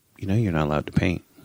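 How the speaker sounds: put-on kid voice, flat and dead serious. Retelling a child's question while painting: imitating a kid speaking dead serious. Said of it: "He's dead serious the entire discussion".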